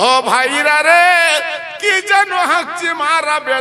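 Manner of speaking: high, loud, slow call from a distance.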